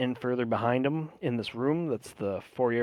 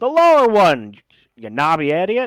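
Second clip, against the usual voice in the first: very loud, shrill, booming gnome yell; 6 semitones higher, 13 dB louder than usual. Narrating a scene, voicing the gnome behind the stone door, yelling gnome voice. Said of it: "the gnome yells up".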